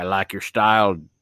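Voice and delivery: put-on cowboy voice. Acting out Sam Elliott walking up to the devil: Sam Elliott voice. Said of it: "Sam Elliott moseys up. He's like".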